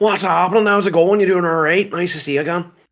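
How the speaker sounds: very high, loud, energetic Northern Irish accent. Showing how Northern Ireland speakers talk: imitating a Northern Irish accent. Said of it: "their accent is like".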